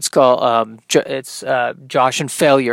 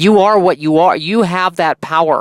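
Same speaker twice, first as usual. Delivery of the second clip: slight slide into a Minnesota accent; 4 semitones higher than usual. Comedian giving a pep talk about accepting what you are, kind of a Minnesota accent. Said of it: "I don't know why I'm going into a kind of a Minnesota accent there".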